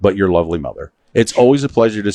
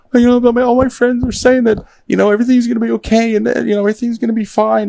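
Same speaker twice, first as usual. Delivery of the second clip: very high, tearful, upset crying voice. Retelling what an upset mom said on the first school day: imitating Leslie crying. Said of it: "She's crying. She's like".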